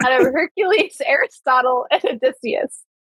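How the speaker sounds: words broken up by giggling throughout. Telling a story about a department party, unable to stop giggling. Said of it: "I can't stop giggling".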